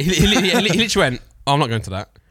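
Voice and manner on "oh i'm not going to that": play-acted, completely dead-serious delivery, no joking. Retelling how someone flatly turned down coming: imitating a serious reply. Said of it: "It sounded really serious".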